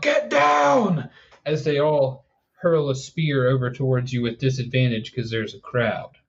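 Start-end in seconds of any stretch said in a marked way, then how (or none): 0.0-1.1 very high, rough shout, "down" stretched out. Voicing a group of guards who yell at the crowd: guards yelling. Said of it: "group of four guards are going to yell".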